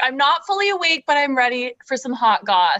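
usual speaking voice

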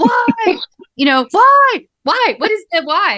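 slow, high-pitched yelling. Addressing the listener and the sky, yelling. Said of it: "I'm yelling this not just at you".

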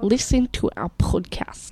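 put-on Russian accent. Performing a line after being asked for one: put-on Russian accent. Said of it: "I'll try and say it in Russian accent".

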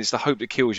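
plain

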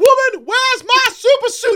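very loud, high-pitched, top-of-the-lungs shout. Recalling shouting at a Frozone at Disneyland, retelling own shout at full volume. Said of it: "At the top of my lungs".

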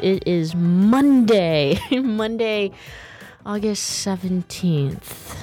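downcast, glum, sad, gloomy tone. Host [name] giving the date on her show, sounding sad. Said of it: "Why do I sound like, you know, I'm so sad about that?".

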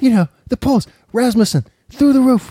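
tiny, very high-pitched little voice. Showing his second mode, in Donald Trump's little voice. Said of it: "he's got the little voice".

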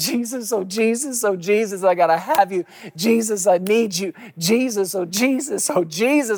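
put-on crying out. Imitating people who come to jesus every day: imitating someone crying out. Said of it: "if you stop crying for a second".

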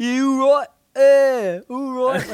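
over-the-top put-on southern drawl, very slow. Showing how an accent can be exaggerated: exaggerated put-on accent. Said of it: "I'm obviously doing something extreme".

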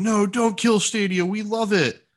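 pleading voice, high and slow.

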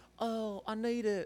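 very high-pitched put-on English accent. Telling a sexual story, quoting a woman from England: imitating her English accent. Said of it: "that's a perfect English accent for her".

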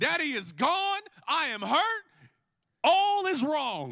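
put-on swooping, panicky, freaked-out small-child voice in distress. A father retells how his son saw an empty chair, imitating a screaming child. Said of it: "just starts screaming, freaking out".

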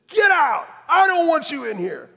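furious screaming, very high and very loud. Retelling how a priest kicked them out of church: imitating someone screaming. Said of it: "started screaming at us and said".

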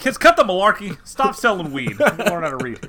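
very loud, high-pitched yelling voice.

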